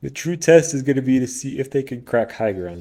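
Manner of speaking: speaking through a yawn. Game commentator calling a match, yawning while talking. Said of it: "I apologize for yawning".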